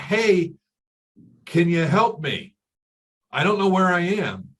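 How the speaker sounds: loud, high, shouted yell. Retelling how a man in a hot air balloon yelled to a hiker below: retelling a yell. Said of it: "he yelled out".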